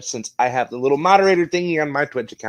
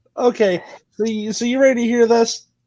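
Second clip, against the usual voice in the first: laughing through the words, pitched up; 9 semitones higher than usual. Apologizing for laughing, then asking the others if they're ready to hear this; laughing while talking. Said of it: "Sorry, I'm laughing".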